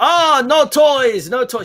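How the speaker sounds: put-on very high-pitched German accent. Imitating a character talking to the kids: Burgermeister Meisterburger German accent. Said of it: "She even does it in that German accent, like the Burgermeister".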